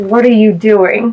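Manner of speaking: whisper forced through gritted, clenched teeth. Sneaking over to another character, whispering in the ear through gritted teeth. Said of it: "slightly whisper in the ear, ... through gritted teeth".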